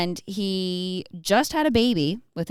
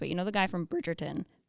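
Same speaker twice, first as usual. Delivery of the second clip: cracking voice, quieter; 8 dB quieter than usual. Chatting about a film's cast, the speaker struggles to recall an actor, voice cracking. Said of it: "sorry for my voice crack".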